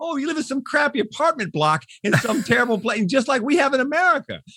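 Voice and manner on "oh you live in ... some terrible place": high, put-on, dismissive, offhand tone. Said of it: "it'd be like".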